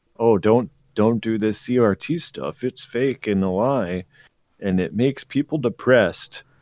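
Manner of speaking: usual speaking voice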